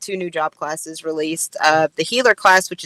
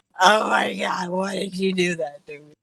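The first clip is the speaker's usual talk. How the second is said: mock frazzled, tearful lament, close to crying; 3 dB quieter than usual. Acting out being frazzled after a hard dungeon run: mock crying, frazzled. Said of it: "I'm probably crying".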